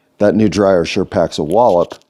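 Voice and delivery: plain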